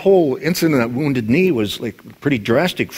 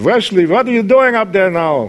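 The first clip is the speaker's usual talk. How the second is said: put-on Yiddish-inflected Eastern European accent; 8 semitones higher, 5 dB louder than usual.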